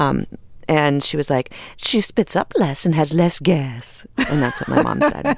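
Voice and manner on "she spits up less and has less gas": put-on slow, distant mid-Atlantic actor accent, commercial-style read. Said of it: "a little bit of a weird accent".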